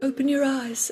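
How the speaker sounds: ethereal, breathed-out, all-present spirit voice.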